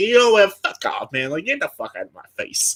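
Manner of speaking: high, swooping, animated mobster voice, dismissive. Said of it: "mobster mentality".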